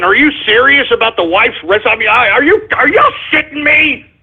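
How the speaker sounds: upset, high-pitched, agitated disbelief. Reading out caller names on a broadcast and getting worked up: upset and agitated. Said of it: "I can't really get that upset here".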